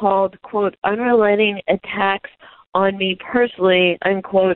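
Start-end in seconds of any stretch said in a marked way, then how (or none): none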